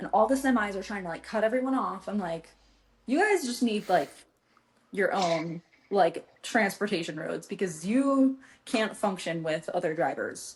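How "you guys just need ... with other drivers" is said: ordinary talk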